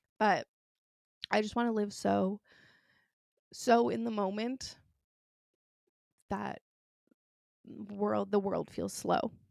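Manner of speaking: tearful voice, crying while talking. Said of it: "Why am I crying again?".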